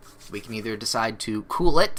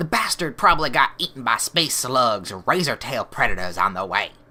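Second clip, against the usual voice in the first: put-on Texan accent with drawl. Voicing a pirate in a game argument: Texan accent. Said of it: "why these are Texan now".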